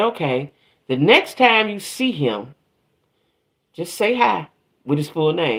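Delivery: ordinary talk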